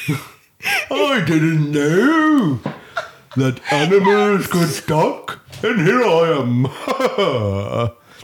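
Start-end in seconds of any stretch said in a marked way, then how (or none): 0.9-7.9 high, loud, very slow hippo voice. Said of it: "That's a hippo".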